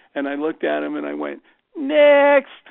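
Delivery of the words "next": very high, loud, mocking sarcastic voice. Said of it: "he'd always say with this really high voice".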